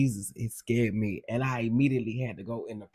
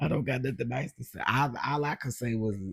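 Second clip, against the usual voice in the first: usual speaking voice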